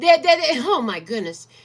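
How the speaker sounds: emotional, choked up, voice catching in throat. Reading tarot cards and speaking of ancestors, choked up with emotion. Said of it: "It got me all choked up".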